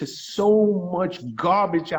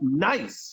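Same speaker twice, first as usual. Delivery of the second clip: heavy, hard stress on the word "nice"; 3 semitones lower, 4 dB quieter than usual. Talking about finding someone genuine: stress on nice. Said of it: "I can't stress that word enough".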